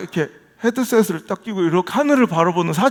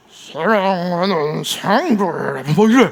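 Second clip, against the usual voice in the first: oily, put-on preacher voice, low, slow and greasy. Mimicking how a pastor talks when preaching, lowered greasy preacher voice. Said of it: "목소리를 깔고 느끼하게".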